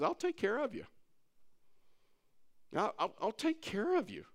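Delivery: hushed, slightly high-pitched whisper. Retelling words God whispered at the store: imitating a whisper. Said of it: "God whispered to me".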